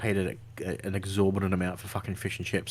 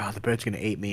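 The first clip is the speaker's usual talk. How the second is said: ordinary talk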